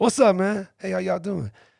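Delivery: put-on casual, old street OG style voice. Retelling how he greeted two kids on bikes: imitating himself acting like an OG. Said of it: "Like a O G".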